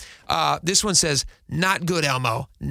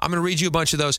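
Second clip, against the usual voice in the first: normal talking voice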